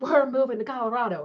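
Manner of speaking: high, loud, hysterical, overwrought outburst. Speaker retells calling her husband, acting out her past hysterical outburst. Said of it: "I'm hysterical".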